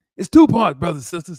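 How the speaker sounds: belted out high and loud. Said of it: "That's my [name] voice".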